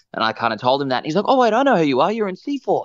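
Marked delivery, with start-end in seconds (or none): 1.3-2.9 put-on high, broad, thickly laid-on Australian accent. Retelling how the judge from The Voice in Australia recognized Mitch, as Keith in full Aussie mode. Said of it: "just went full Aussie mode".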